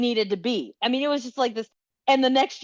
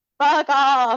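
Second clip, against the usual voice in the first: loud, bleating goat-like voice; 3 semitones higher, 5 dB louder than usual. Imitating the goat man yelling at hikers: goat voice. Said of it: "you gotta do it with the goat, the goat sound".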